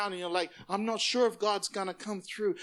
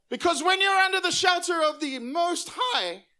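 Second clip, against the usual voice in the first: raised, high voice breaking as it lifts; 9 semitones higher, 6 dB louder than usual. Speaking to the congregation: voice cracking. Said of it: "like my voice just cracked".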